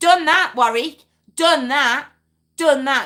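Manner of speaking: loud, insistent, rising voice. Answering a listener's message about voting out politicians: raised voice. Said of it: "Look at me raising my voice now".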